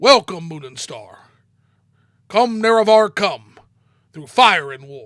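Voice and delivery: very loud, booming put-on character voice. Trying a voice few people can do: Dagoth voice. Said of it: "let me try real quick... the Dagoth voice... That's as close as I can get".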